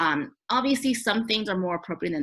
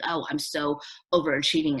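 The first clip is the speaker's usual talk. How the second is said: ordinary talk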